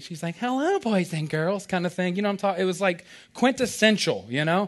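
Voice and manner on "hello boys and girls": slow, sugary, precious sweet teacher voice. Retelling how the Bible bus teacher greeted the children: imitating a precious, sweet teacher. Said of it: "looking all precious and sweet".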